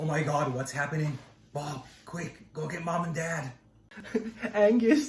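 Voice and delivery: very quiet, hushed, rushed, frightened panicking. In a mock game commercial, one of the kids calls to Bob, scared and panicked. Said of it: "I'm so scared".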